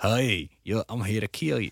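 mock hillbilly accent and speech. Playing someone from the future who sounds like a hillbilly: mock hillbilly accent. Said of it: "sound like a hillbilly".

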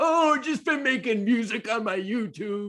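shrill, very high-pitched comic yell. Recalling a comedy bit he used to do, yelling Will Forte impression. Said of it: "yelling kind of voice".

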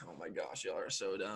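acted, low, hushed, annoyed sulky mutter. Retelling how Dante reacted when they gave his phone back, mimicking butthurt Dante. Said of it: "And he was butthurt".

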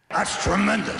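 put-on gruff boss voice. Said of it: "you're giving it to Stephanie and she's like".

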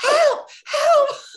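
shrill scream at very high volume. Retelling being stuck between floors and calling out, retelling screaming for help. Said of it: "So I started screaming".

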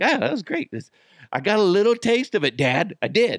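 high, happy, contented dog voice. Retelling what his happy dog would say to him: voicing his happy dog. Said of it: "My dog's just, he's happy as could be".

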